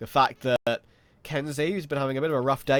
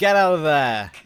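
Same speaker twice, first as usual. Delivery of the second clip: put-on British police officer voice, louder; 3 semitones higher, 8 dB louder than usual. Playing the officer on patrol telling a player to leave: British police officer. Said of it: "he's the officer on patrol".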